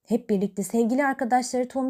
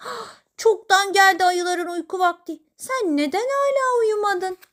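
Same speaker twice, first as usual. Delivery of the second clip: all in a fluster, pitched-up voice; 8 semitones higher, 4 dB louder than usual. Narrator reading a mole's line to a bear in its cave, flustered. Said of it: "Köstebek telaşla".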